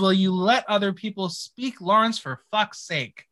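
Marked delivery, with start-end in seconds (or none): none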